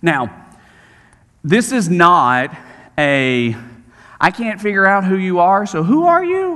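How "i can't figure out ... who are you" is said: genuinely confused, puzzled, sincere tone. Showing the wrong reading of the Pharisees' question: puzzled honest question. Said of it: "It's not that inflection".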